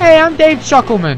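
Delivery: high, loud showman character voice.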